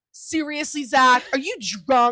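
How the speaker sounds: mock-angry, accusing, acted furious tone. Retelling how she reacted when zach fell, acting out an angry accusation. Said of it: "I see red".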